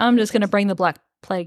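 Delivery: mock snide, cheeky, snarky sarcastic throwaway tone. Retelling a book character's threat as a snarky jerk: imitating a snarky character. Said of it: "a snarky asshole".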